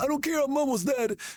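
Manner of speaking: put-on squeaky, very high little-old-lady voice. Retelling a bit where a cursing grandma answers a kid, old grandma voice.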